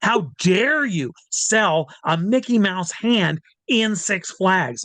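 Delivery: put-on spitting-mad man voice. Retelling the head of marketing's confrontation: imitating a spitting mad man. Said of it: "he's spitting mad".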